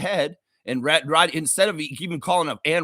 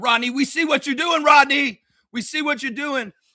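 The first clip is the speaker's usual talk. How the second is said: hollering, pitched very high; 10 semitones higher than usual. Telling how he yelled at a referee named rodney during a game, retelling a yell. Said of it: "And I yelled".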